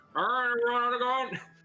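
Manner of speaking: shouting through a megaphone. Voicing a character shouting orders through a panpipe held like a megaphone: shouting into a megaphone. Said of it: "the big cone they just shout into".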